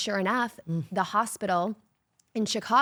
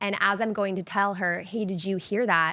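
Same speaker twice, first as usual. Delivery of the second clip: plain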